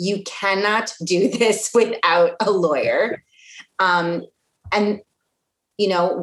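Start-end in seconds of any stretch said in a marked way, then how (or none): 0.0-3.2 slow, deliberate delivery with every word spaced out. Repeating the lawyer point for anyone listening, said slower, deliberately. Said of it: "I'm going to say it slower".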